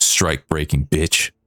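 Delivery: contemptuous, scornful jeering tone. A game master voices a passerby who spits on the character, a contemptuous insult. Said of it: "Someone actually spits on you".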